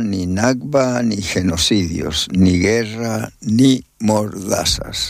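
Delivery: ordinary delivery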